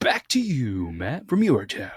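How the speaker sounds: swooping, on-air radio announcer voice. Trying out a sign-off line in the studio, in a radio voice. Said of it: "I think that'd be my radio voice".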